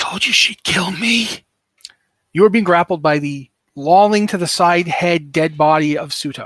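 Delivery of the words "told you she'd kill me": hissing undead corpse voice. Narrating the fight, voice the dead body grappling a player: hissing voice. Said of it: "you hear a hissing voice say".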